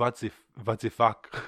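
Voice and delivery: fake Flemish accent, slow. Joking about vaccine news, the speaker voices Belgium in a bad Flemish accent. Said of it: "a Flemish accent".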